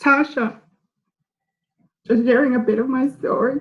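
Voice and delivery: talking through tears. Speaker on a call after hearing Tasha tell their story, crying while talking. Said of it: "I'm sorry for crying so early".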